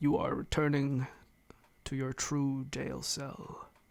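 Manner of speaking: commanding, echoing, godlike voice. Game master voices a voice from the door to the players: booming, echoing voice. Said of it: "you hear this booming voice echoing".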